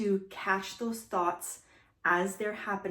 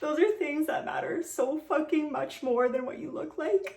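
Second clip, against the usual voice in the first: moved, emotional, pitched-up voice; 8 semitones higher than usual. Speaker addresses listeners directly; getting emotional. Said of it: "I'm getting emotional".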